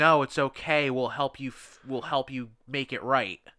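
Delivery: ordinary delivery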